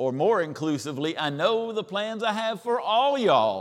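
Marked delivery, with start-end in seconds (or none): 1.2-3.6 very high, loud Eastern Kentucky dialect. Showing how a scripture verse might sound, in Eastern Kentucky dialect. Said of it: "say it in that Eastern Kentucky dialect".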